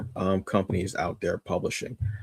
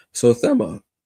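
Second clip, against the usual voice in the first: voice cracks on a word; 4 dB louder than usual. Introducing the newest Kickstarter title, voice cracking. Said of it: "as my voice cracks".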